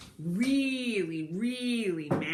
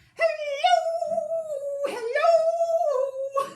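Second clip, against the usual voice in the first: goofy, silly voice, very high and loud; 8 dB louder than usual. Leading a group in saying hello as silly as possible; silly voice. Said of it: "Let's say hello as silly as we can".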